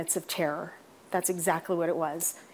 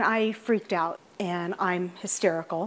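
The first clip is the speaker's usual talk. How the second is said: ordinary talk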